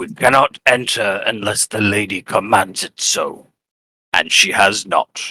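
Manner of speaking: low, gruff wolf guard character voice. A guard bows his head and briefly replies, in a gruff voice. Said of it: "with a gruff voice".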